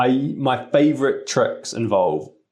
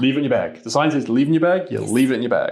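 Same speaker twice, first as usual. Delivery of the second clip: ordinary talk, nothing marked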